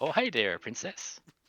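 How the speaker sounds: high, bad put-on frog voice sounding Canadian. Trying a Kermit the Frog impression for the group, Kermit impression sounding Canadian. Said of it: "it's just coming off as Canadian".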